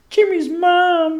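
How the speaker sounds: botched, very high cartoon voice, "mom" drawn out. Showing a failed attempt at a Carl Wheezer voice. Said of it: "the one voice that I can't fucking do is Carl Weezer".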